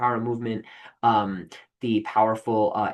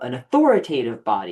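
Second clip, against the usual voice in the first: scornful, mocking delivery, loud; 5 dB louder than usual. Lecturing to a class on the canon, saying a term in a mocking voice. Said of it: "You can hear my like mocking voice there".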